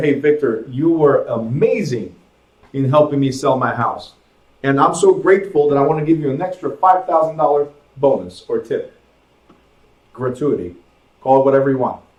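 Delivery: ordinary delivery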